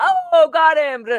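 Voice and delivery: high, loud, excited gotcha call-out.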